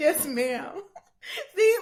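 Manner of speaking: very high-pitched, choked-up voice, near tears. Moved by an invitation to sit and drink together, answering choked up, near tears. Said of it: "I'm about to cry".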